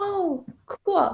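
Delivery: put-on flat, stoic voice. Retelling her partner's reaction to a surprise gift: imitating a stoic flat reply. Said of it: "he's so stoic".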